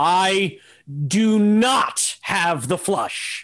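mock very slow, drawn-out, super dramatic delivery. Retelling poker games, imitating the opponent's big reveal: super dramatic Maury Povich reveal. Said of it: "do this super dramatic thing where he'd pull out an envelope and he would go".

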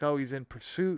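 ordinary talk, nothing marked

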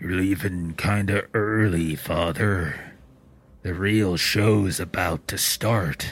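muffled, as if speaking from behind a mask. A masked security guy by the front door speaks as you leave, voice muffled under a mask. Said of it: "you hear a voice kind of muffled coming out from underneath him".

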